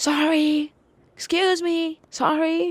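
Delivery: mock very high, very slow, drawn-out shrieking. Retelling a customer screaming through the store: imitating a customer screaming. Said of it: "she's just screaming".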